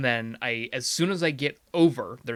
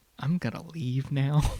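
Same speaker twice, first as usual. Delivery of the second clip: low-key, muted, small, understated delivery; 2 semitones higher than usual. Retelling how a friend quietly said she was leaving: imitating someone speaking very quietly. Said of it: "I just hear her very quietly go".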